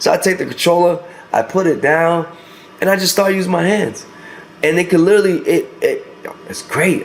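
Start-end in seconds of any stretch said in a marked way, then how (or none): 4.6-7.0 stuttering, stammering, tripping over words. Speaker praises a headset as better than Quest two, stuttering. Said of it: "I'm stuttering".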